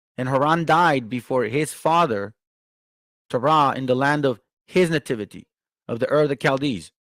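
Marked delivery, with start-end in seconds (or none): none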